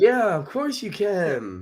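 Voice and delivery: very slow, sing-song, fake-polite customer service voice. Imitating the other speaker answering a pizza caller: fake customer service voice. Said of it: "I'm using my fake".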